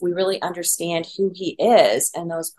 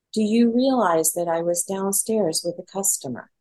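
very calm, composed, unruffled, even voice. Retelling what a man said to the speaker while he had a customer downstairs: mock very calm voice. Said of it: "in a very calm voice".

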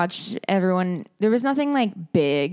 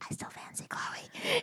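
put-on very hushed whisper, like a little child; 15 dB quieter than usual. Retelling how Toby told Millie his feelings: imitating Toby's childlike whisper. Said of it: "whispers it like a little child".

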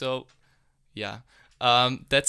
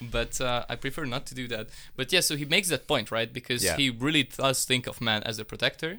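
normal talking voice

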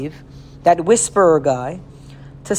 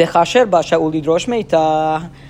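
plain

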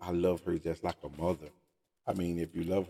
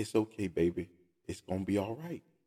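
mock gentle, nice, calm, settled, soothing voice; 2 semitones higher than usual. A churchgoer quotes one of the mothers of the church: imitating a nice, calm voice. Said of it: "in a nice, calm voice".

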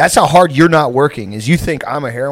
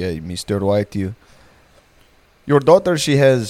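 put-on stoic, deadpan Indian accent, doctor character voice; 4 semitones lower than usual. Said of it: "a very stoic Indian doctor is like".

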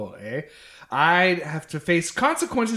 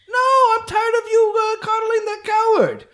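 loud, very high, loose put-on vague European accent; 5 dB louder than usual. As Nikolai, arguing back at Whitney before reporters, loose European accent. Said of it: "This accent, by the way, is really loose".

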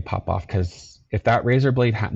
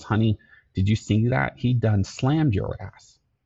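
put-on voice, laughing while talking; 2 semitones higher than usual. Retelling how mom reacted after a fight: imitating mom laughing while talking. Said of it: "She started laughing, goes".

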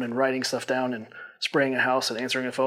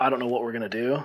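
re-enacted ugly, tearful crying. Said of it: "ugly crying".

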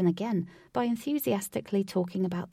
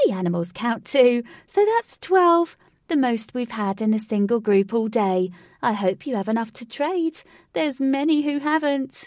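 very loud, bright, high, chirpy chatter; 5 semitones higher, 8 dB louder than usual. Narrator reading a ticket lady counting a group and its animals: chirpy. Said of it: "A chirpy lady wearing a bobble hat".

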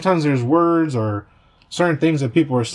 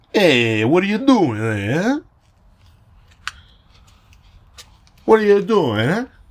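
put-on Italian accent, higher pitch; 5 semitones higher than usual. Doing Italian sayings for viewers: Italian voice. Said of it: "prepping my Italian voice to sound more Italian".

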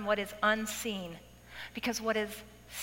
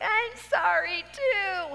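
play-acted crying through the words, high, loud, tearful; 9 semitones higher, 5 dB louder than usual. Retelling apologizing to her as she gets out of her van, retelling a crying apology. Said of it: "I'm crying".

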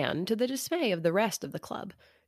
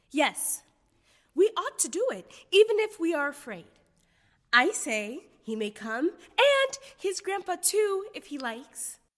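very high, slow, bold and spirited outburst; 10 semitones higher than usual. Beth speaks up before the club votes, spirited burst. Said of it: "This spirited burst from Beth".

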